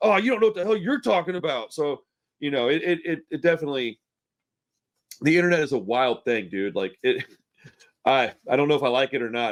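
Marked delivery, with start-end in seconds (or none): 0.0-1.7 put-on anger, higher and faster. Talking about replying to people online, acting out a pissed-off response. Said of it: "being like all pissed off and going".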